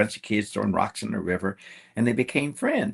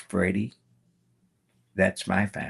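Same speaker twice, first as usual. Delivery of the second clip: acted-out hushed voice, very, very quiet. Telling a story, quoting a man's reply, retelling it very quietly. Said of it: "very, very quietly".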